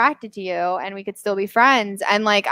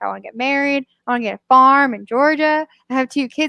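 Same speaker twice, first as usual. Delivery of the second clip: full-on weepy, tearful blubbering; 3 semitones higher than usual. Retelling a drunk comic's crying words after a rejection: imitating someone crying. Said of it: "And he just starts full on crying".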